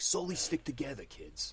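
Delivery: put-on near-Boston accent, put on. Imitating the leader character from a film, with almost a Boston accent. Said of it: "He has like a like a Boston accent almost".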